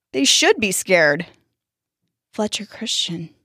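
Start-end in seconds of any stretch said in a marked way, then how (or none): 2.3-3.2 whisper, almost too quiet to hear. A scared boy answers the question put to him, barely audible. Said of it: "almost not loud enough to hear".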